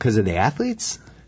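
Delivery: questioning rising intonation. Speaker in a basketball discussion offers a reason, questioning tone. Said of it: "You said it with a question mark in your voice".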